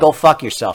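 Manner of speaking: ordinary delivery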